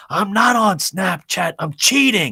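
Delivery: very high, drawn-out hollering. Retelling a son's reply to a scolding: imitating his son yelling back. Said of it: "I can hear him yell back".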